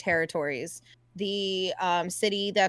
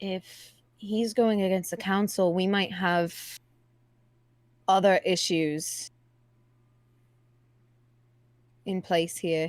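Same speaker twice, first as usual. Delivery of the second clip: speaking in a whisper. Leaning over to another character to speak privately: whispering.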